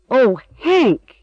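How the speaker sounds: high gasping cry on a caught breath. Emily, hurrying to a gardener who fell into a hole: gasping. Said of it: "Emily gasped".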